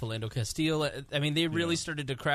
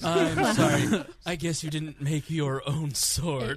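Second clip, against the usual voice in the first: mock disgusted voice, louder; 4 dB louder than usual. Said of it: "The amount of disgust in [name]'s face and voice".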